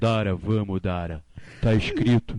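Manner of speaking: put-on strong, heavy Carioca accent, low and slow drawl. Recalling a bad actor in a show they watched, doing Igor's strong Carioca accent. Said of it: "o cara tinha um sotaque carioca, bem forte".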